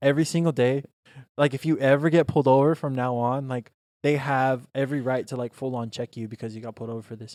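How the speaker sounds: plain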